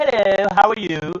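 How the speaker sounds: put-on slow, polished proper phone voice, accent smoothed away. Speaker describing his wife switching accents on the phone; imitating wife's phone voice. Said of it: "and then she'll get on the phone, and she'll be like".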